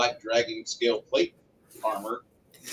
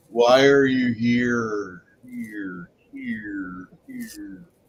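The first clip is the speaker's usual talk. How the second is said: echoing, rolling, drawn-out mountain echo voice; 4 dB louder than usual. Narrating to the players, voicing the mountain: rolling voice across the mountains. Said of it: "you hear a rolling voice across".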